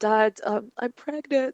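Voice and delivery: tearful, high-pitched, crying words between sobs. Retelling telling dad about the pregnancy: imitating own past crying. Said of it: "I was crying".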